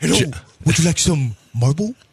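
creepy, luring clown voice. Joking that a man is the clown from It, doing a Pennywise clown voice. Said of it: "Are you Pennywise or is this [name]?".

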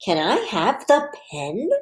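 rising question intonation. Leading children in a reading activity, reading a question in a question voice. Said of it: "Let's read it with our question voice".

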